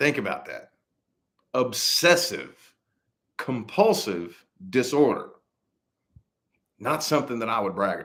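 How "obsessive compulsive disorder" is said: each word dragged out very slowly. Spelling out an acronym for listeners, saying it very slowly. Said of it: "say it slowly".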